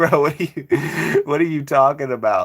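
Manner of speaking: put-on speech broken up by laughter. Retelling own reaction to a commentator's line: retelling own laughing reaction. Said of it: "I was just laughing".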